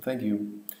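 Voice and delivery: flat, lifeless politeness. Example of thanking a toll booth attendant: lifeless thank you. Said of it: "you would say it very lifelessly".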